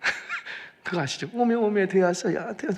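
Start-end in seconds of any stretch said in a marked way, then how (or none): 1.3-2.8 high sobbing cry in Jeolla dialect. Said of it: "막 펑펑 우는 거예요".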